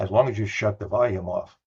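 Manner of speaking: muttered quietly under the breath. Speaker retells a woman's added remark, muttering under her breath. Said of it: "Then under her breath".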